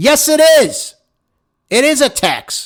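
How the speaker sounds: high, loud, emphatic shouted delivery.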